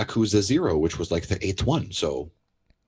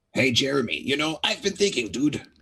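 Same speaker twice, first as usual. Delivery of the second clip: awful put-on voice, pitched up high; 5 semitones higher than usual. Acting out a listener-written little play: awful Toad voice. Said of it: "our awful Toad voices".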